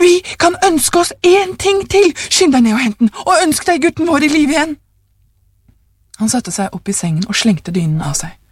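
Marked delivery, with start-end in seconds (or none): 0.0-4.8 high, exultant, triumphant shout, pitched way up. A parent cries out to the other parent in bed: triumphant shout. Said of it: "ropte hun triumferende".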